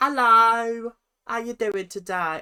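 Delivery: put-on Essex accent. Imitating Abby calling someone on her phone: Essex accent imitating Abby. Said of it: "I don't know why she's got Essex accent".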